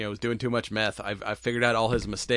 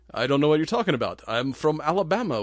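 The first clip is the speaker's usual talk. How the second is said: put-on speaking with a German accent; 5 semitones higher, 4 dB louder than usual. Acting out a movie scene where a man denies being a Nazi; German accent. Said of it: "with my German accent".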